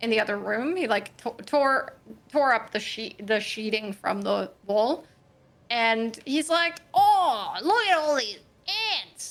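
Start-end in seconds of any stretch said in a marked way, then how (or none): 6.9-9.3 pitched-up voice, exclaiming. Act out him tearing the sheeting from the wall in the other room, imitating Judy's dad. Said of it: "That's what he sounds like".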